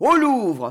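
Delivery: thundering, booming, loud shout. Narrator reads a man's cry to a crowd cheering the prince: thundering shout. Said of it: "hurla Capestan d'une voix de tonnerre".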